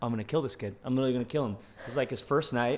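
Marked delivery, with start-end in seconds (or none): 0.0-1.6 re-enacted panicked delivery. Recounting a boy throwing up in a taxi, retelling own panic. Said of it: "And I'm just like panicking".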